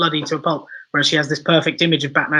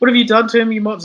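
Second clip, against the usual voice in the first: high, loud, crying wail; 7 semitones higher, 5 dB louder than usual. Retelling a scene where a doctor wails at guards: imitating crying and wailing. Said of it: "she's obviously crying, wailing".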